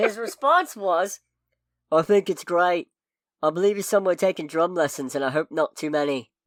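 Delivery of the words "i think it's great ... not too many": bad, put-on Liverpool accent. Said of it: "pardon the bad accent that's incoming".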